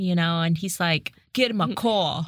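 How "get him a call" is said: put-on Boston accent in a mobster voice. Speaker imagines a mafia-leader husband talking: attempted boston accent. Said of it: "Only if he has like a Boston accent".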